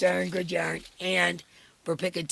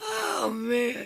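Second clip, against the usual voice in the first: laughing hard, words dragged out very slow, swooping; 6 semitones higher than usual. Reading super chats, laughing so hard it's taking the voice. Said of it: "I'm laughing so hard it's taking my voice".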